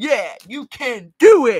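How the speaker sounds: slow, put-on tough-guy voice. Demonstrating how they say their positive motto, tough guy voice. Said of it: "you say it in like a tough guy voice".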